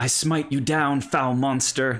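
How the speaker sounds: bold, loud, high heroic battle cry. Narrating the scene, Cole's voice comes from inside the stable: loud Cole voice. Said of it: "come across uh, loudly".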